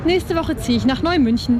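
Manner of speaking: ordinary talk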